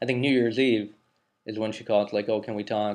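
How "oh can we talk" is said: put-on tearful crying voice, quieter. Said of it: "kinda crying, crying a half".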